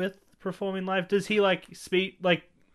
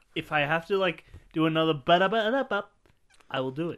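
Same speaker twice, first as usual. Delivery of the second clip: ordinary talk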